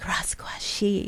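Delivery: posh, breathy, fancy whisper. Showing how to say the show's name: said real fancy. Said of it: "real fancy".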